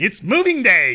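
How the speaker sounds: flippant, glib, facetious newscaster read. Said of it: "how facetious she was being there".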